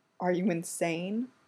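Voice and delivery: hushed, soft, low voice. Derek breaks away from kissing Styles and asks him, hushed.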